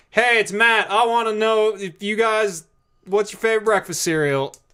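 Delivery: mock very high, shrill, shouted yell. Host re-enacting what he yelled into his phone for the folks at home, retelling a yell. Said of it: "I yelled that into my phone".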